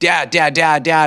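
anxious yell, high and loud.

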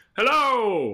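very high, loud calling out. Retelling a character calling into a cave to hear the echo: imitating calling out into a cave. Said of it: "do echoes of the cave".

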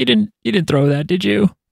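mock, pitched-way-up, blubbering crying voice. Retelling a comic scene where a character cries over a ring: imitating someone crying. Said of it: "and he's crying, being like".

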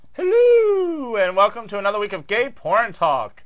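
high, loud posh British, swooping, stretched "hello". Podcast host, back from seeing the Queen, opens the episode in a little Queen accent. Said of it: "I did my little Queen accent".

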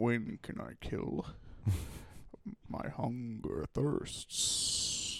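very slow, hushed, whispered lumbering tree-creature voice. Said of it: "You kind of sounded like an int from Lord of the Rings there".

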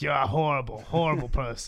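put-on grizzled motherly voice. Joking about a Star Wars scene, voicing Leia as a grizzled 1950s mom. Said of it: "Like a grizzled mom from, like, the 50s".

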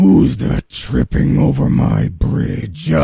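loud, high, rough, creaky troll roar. Narrator reads the troll challenging the billy goat crossing his bridge, roaring. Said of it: "Roared the troll".

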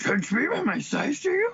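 very high, small, squeezed-up alien voice. On a May the 4th podcast, the speaker does a Yoda voice. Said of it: "How was that for a Yoda voice?".

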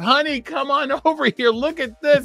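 put-on, imitated screaming. Retelling calling one's wife over to see visitors: imitating someone screaming. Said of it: "I'm screaming at my wife".

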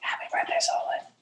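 soft asmr-style whisper. Podcast hosts wish solon a happy birthday, asmr whisper. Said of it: "make a remix with your whisper".

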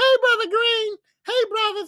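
very high called-out voice. Describing hearing her on a Zoom meeting: imitating Sister Lockridge's voice. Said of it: "and I hear Sister Lockridge".

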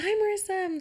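mock bubbly, super-cheerful, very high-pitched voice. Retelling a phone call to a woman at the airport, mock super-cheerful greeting. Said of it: "super cheerful".

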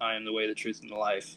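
ordinary talk

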